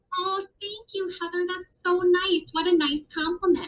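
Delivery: kind, grateful tone. Showing boys and girls how to accept a compliment: kind, grateful tone. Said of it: "how much kinder that sounded".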